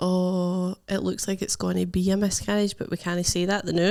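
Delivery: ordinary delivery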